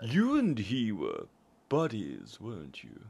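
slow, swooping voice, every word drawn out. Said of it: "Matt Berry does that for every word".

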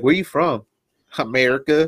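put-on Southern American accent. Imagining Southerners travelling abroad, the speaker is imitating a Southern US accent. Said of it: "that's what y'all sound like".

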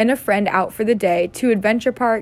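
ordinary delivery

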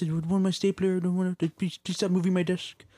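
meek, high-pitched, small, shrinking voice. Describing a meek office character, the speaker mimics how he talks: Milton impression, meek voice. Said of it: "talks like this".

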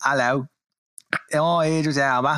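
unconvincing put-on London accent. Asked to do the English accent again: bad Idris Elba London accent. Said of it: "You don't sound like you're from London".

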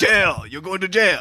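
put-on Japanese accent with Italian sound. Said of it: "You sound like an Italian Japanese person".

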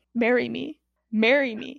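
normal talking voice

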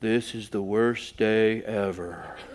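very slow, gloomy, mopey complaining tone. Retelling what a slumped-over teen said walking into a store: imitating a gloomy slumped teen. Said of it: "Like that".

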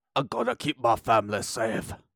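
horrible put-on Irish accent. Acting out a line from the Greenland trailer, horrible Irish accent as Gerard. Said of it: "That's a horrible Irish accent".

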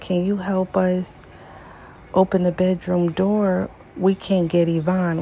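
ordinary talk, nothing marked

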